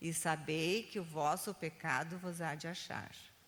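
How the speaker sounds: ordinary delivery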